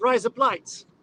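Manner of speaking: Australian accent, words run together. Teaching the other speaker a phrase: fast Australian accent. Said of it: "but you say it kind of fast".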